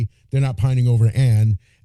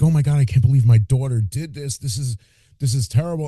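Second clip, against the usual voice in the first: put-on crying voice. Retelling the father finding the bodies: imitating a crying father. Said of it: "He's crying like".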